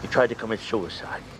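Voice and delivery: heavy, sad delivery.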